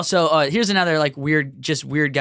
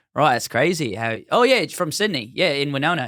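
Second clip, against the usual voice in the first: clumsy, bad put-on Australian accent. Showing how they chat with people at a party, Australian accent. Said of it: "I would do like Australian accents".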